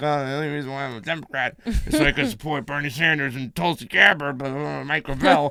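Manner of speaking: mock muttering under the breath. Retelling answering a poll caller: imitating muttering under breath. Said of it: "kinda muddled under my breath".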